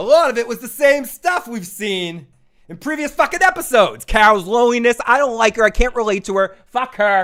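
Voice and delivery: acted-out ranting tirade, loud and high-pitched. Reading out a viewer's comment as a rant: imitating Joe's rant. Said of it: "That was bad".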